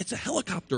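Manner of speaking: put-on hushed little-boy whisper. A narrator reads the little boy's reply to the boss: little boy whispering. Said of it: "whispers the little boy".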